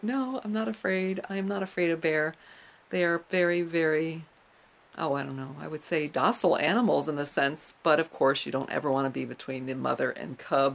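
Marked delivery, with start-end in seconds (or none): none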